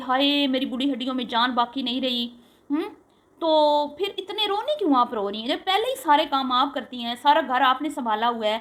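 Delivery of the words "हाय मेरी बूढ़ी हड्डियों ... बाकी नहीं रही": normal talking voice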